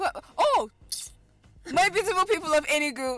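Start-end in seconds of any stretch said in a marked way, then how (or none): 1.7-3.2 fast, loud, shouting radio host voice. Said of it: "You have not told us who you are".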